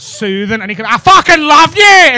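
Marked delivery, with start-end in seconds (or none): 0.9-1.8 menacing, raised, threatening Northern Irish accent. Describing how Northern Irish people sound: threatening Northern Irish accent. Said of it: "Northern Irish people could be saying".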